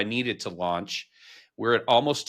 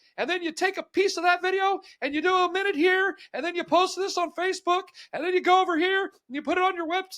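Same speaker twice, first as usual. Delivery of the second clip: awful put-on voice, pushed very high. Retelling advice heard years ago, bad Gary Vee impression. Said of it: "I can't do his voice, but that's my version of his voice".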